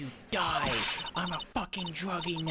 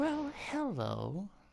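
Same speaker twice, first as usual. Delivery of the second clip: fully committed, playacted put-on girly voice; 4 semitones higher, 3 dB quieter than usual. Voicing a character greeting a visitor in a detention center: put-on chick voice. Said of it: "You don't have to do the chick voice".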